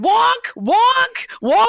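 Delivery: high, loud screaming that sounds like an alarm.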